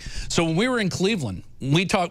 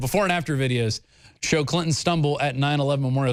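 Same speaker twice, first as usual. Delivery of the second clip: ordinary talk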